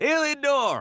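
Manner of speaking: loud shout, calling out. A character calls to heliodor several levels below, yelling down. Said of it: "You you'd have to yell down".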